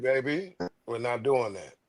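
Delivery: deep, dominant, commanding put-on voice, unbothered and calm. Describing men with deep voices who never need to yell, the speaker imitates one: imitating a deep voice. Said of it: "the brothers with the deep voices".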